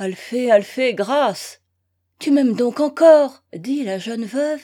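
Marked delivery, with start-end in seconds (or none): 2.2-3.4 loud, joyful cry of happiness. Reading a novel, the young widow cries out to Eugène: crying out with happiness. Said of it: "avec un cri de bonheur".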